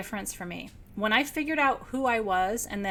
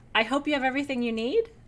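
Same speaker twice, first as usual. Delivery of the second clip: voice rising on the word "need", question-like; 3 semitones higher than usual. Showing how a statement can sound questiony: rising pitch on need. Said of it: "it sounds questiony when you raise your voice at the end".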